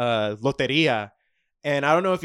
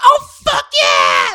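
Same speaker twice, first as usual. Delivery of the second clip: very high-pitched, shrill yell, blasted into the mic; 8 dB louder than usual. Retelling a girl's reaction when she has the card: imitating a shout into the mic. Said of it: "blast the mic and shit like I just did".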